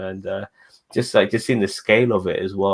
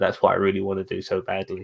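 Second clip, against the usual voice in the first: normal talking voice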